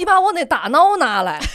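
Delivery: put-on rural Tianjin outskirts accent. Acting out how high school classmates from the villages around Tianjin spoke, in a rural Tianjin outskirts accent. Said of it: "就是属于四郊五县的口音".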